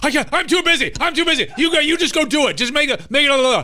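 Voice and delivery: very high, loud, harried, too-busy, dismissive tone. Retelling a phone call, imitating someone overwhelmed and too busy. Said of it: "That's what I sounded like".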